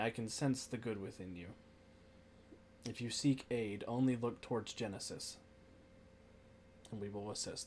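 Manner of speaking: gentle, soft, sweet voice. A voice speaks into Centuria's mind, offering help, in a soft and sweet voice. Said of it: "a sort of soft and sweet voice".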